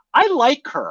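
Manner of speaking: defensive, pitched very high. Retelling a reply to a mom rolling her eyes: imitating a defensive reply. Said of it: "I said it very defensively".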